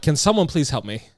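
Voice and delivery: put-on loud voice. Stuck down there with the lock jammed, the speaker retells calling out for help. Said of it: "I had to call out loud".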